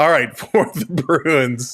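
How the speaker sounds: laughing while talking, cracking up mid-sentence. Trying to announce the team while losing it: laughing while talking. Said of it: "Can't even say it with a straight face".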